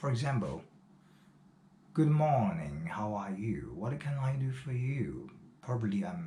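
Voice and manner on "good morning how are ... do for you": put-on British accent, an attempted imitation. Showing an example of imitating the Queen's British accent. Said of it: "I mean the Queen accent".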